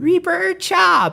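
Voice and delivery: silly, goofy, very high-pitched, jokey calling voice. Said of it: "when he was joking".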